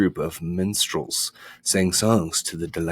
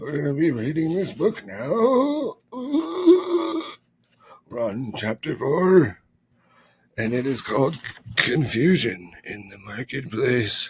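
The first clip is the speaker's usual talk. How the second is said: high, sing-song put-on old man voice, long drawn uh; 8 semitones higher than usual. Announcing the book's chapter four to listeners, old man character voice. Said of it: "Oh, yes, I'm Old Man [name]".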